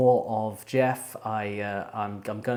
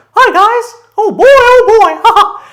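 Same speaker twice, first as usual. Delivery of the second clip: very high, loud, slow, squeaky cartoon voice; 20 dB louder than usual. Wishing a bass-loving man spoke in a really high voice; Mickey Mouse voice. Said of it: "more of a Mickey Mouse kind of".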